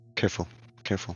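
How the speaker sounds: hushed, very soft and cautious. Warning the group in character about a watching captive: very quiet voice. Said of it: "She will say very quietly".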